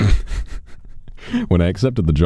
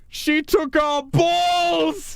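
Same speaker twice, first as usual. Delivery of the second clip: very high, grand, tragic theatrical stage outcry. Retelling how a young man at the back of the room cried out, retelling a tragic Shakespearean cry. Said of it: "he cried out in an incredibly tragic Shakespearean voice".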